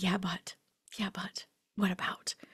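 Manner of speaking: soft, hesitant, reluctant whisper.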